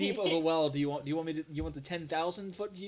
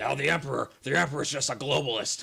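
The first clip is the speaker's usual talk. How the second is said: loud, gruff, raspy ranting broadcaster voice; 3 semitones lower, 5 dB louder than usual. Joking about the Emperor in an Alex Jones voice. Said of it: "I could try to do my Alex Jones voice".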